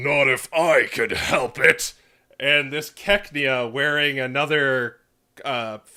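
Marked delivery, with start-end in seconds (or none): 0.0-1.9 really deep, low baritone voice. Recounting a costumed stage show, voicing an offstage character: deep baritone voice. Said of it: "this really deep baritone voice".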